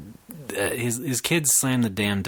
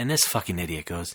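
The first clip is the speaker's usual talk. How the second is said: normal talking voice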